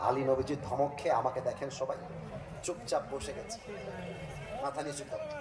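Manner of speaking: hushed, subdued, very soft narration.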